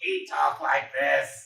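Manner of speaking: rough, very slow artificial voice-box rasp. Describing a TV show character who uses a voice box: imitating a voice box voice. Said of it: "this guy with his voice box".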